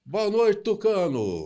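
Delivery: very high, loud, swooping, booming big voice. Retelling greeting customers at work, the speaker mimics one's reply: imitating Tonhão's booming voice. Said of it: "Aí ele com aquele vozeirão".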